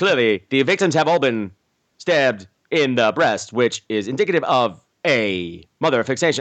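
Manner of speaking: put-on halting voiceover voice, three words at a time. Imitating an actor's exposition line from the movie: Shatner-style halting delivery, big voiceover voice. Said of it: "He did, like, three words at a time".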